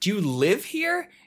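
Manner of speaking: high, loud, acted-out yelling. Telling a story, the speaker acts out someone calling from the window: retelling a yell. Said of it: "she yells".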